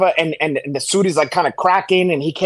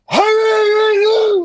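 put-on drunk voice, much higher pitch, slower; 3 dB louder than usual. Retelling the line he said into dead silence before everyone erupted; imitating a drunk. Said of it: "like that".

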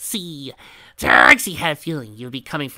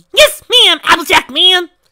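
shrill, very high, very loud squeal; 12 dB louder than usual. A narrator reads the pink party pony's answer to Applejack, in a high-pitched squeal. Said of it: "Squealed the pink party pony".

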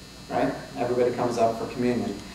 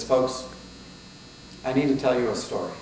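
normal talking voice

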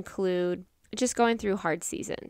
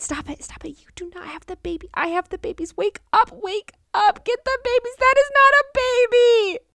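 very high, shrill, loud, frantic whisper-shouting; 8 dB louder than usual. Retelling a past night, imitating frantic whisper-shouting to wake someone. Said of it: "was frantically whisper shouting".

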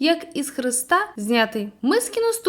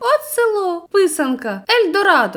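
loud, high, enthusiastic, delighted exclamation; 5 semitones higher, 5 dB louder than usual. A man among the newcomers claps his hands, exclaiming enthusiastically. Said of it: "захоплено сплеснув руками і вигукнув".

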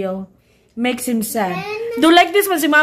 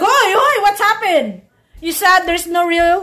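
put-on stunned, shocked, startled child voice; 5 semitones higher than usual. Retelling a child's reaction to a prank: imitating shocked Ezekiel. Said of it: "Ezekiel is shocked. He's like".

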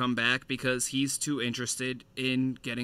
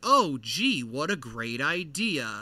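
very slow, swooping, heavily sarcastic. Retelling a scene, quoting Ana Lucia's reply: imitating Ana Lucia's sarcasm. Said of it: "Does anybody enjoy her sarcasm?".

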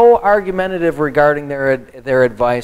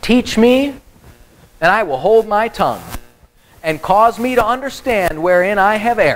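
mocking, sarcastic, pitched-up reading voice; 6 semitones higher than usual. Reading Job's words aloud in a sarcastic voice. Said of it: "I said it that way because that's how I believe he said it".

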